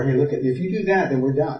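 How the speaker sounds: ordinary talk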